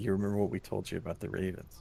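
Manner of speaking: soft, barely audible half-whisper. Speaking in character to another figure about the Ravens: half-whispering in character. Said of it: "kinda whisper to him and be like".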